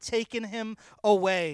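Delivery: ordinary delivery, nothing marked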